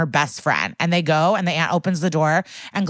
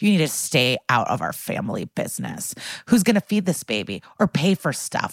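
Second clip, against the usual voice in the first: mock-evil, hostile tone, lower pitch; 4 semitones lower than usual. Recounting a woman's reply to Benson after he defends Gladys, retelling an evil reply. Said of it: "turns around, evil".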